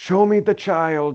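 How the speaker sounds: heavy put-on German accent. A podcaster quoting a guy from a show's first season, in a heavy German accent. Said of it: "as the guy says in the first season".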